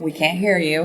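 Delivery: ordinary delivery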